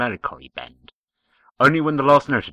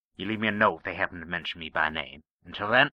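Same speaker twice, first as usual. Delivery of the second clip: ordinary delivery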